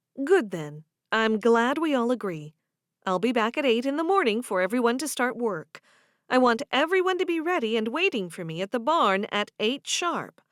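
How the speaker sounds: ordinary delivery, nothing marked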